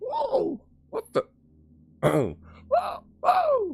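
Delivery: high, cracking, drawn-out "whoa". Ending a video and reacting to own voice: voice cracking. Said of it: "my voice is cracked or something".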